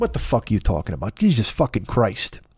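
put-on South Side Chicago man's accent. The speaker voices the guy inside him: South Side Chicago guy voice. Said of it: "a South Side of Chicago guy in me".

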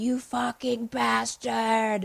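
put-on weird American accent, every word overly precise. Retelling a movie scene where a character yells at the camera: imitating a character's weird American accent. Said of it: "in his weird American accent".

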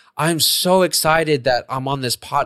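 slow, bored drone with fake excitement.

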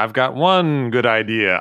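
very slow, high-pitched drawl, every word dragged out. You tell someone how you pictured the man they described, talking like the Count. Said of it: "picturing him talking like the Count".

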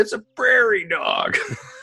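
play-acted very high, drawn-out yell. Retelling what Angie yelled from the other room: imitating Angie yelling. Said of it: "and she just yelled".

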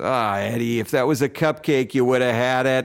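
put-on Boston accent. Retelling what a man said to a kid who fumbled a pass, in a big boston accent. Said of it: "He had a big Boston accent".

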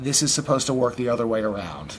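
put-on severe, unbending, very stern tone. Retelling what he said in his office when asked what to do; retelling a very stern reply. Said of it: "in a very stern voice and said".

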